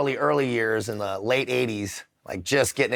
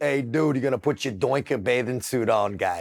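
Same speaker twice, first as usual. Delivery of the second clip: put-on Boston-accented voice. Recalling his dad before swimming as a kid, imitating dad's Boston accent. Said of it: "he's got a Boston accent".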